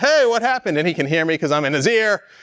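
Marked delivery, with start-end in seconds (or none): 0.0-0.8 mock full-throated, high-pitched shout. Imagining being shrunk inside a man's ear, the speaker acts out yelling. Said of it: "and I'm yelling".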